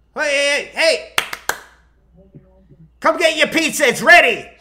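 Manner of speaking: put-on calling-out voice. Retelling being called over in the rain to pick up pizza: imitating the pizza guy calling out. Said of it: "And we hear this".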